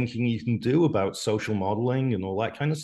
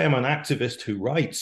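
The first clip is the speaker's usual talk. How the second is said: I'M stressed on a rising pitch. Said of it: "If you want to say".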